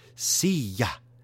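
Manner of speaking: put-on loud, over-enunciated, nerdy American-accented Spanish on "silla".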